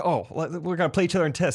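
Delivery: ordinary delivery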